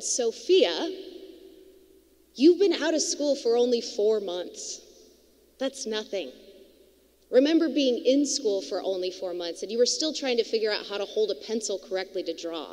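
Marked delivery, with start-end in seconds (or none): none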